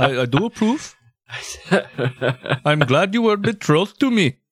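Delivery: put-on high-pitched, very old man voice with Indian accent. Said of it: "really old man Indian voice".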